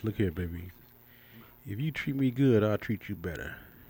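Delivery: deep voice with bass pushed in. Addressing the ladies with added bass, in a deep bassy voice. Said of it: "I'm putting some bass in my voice".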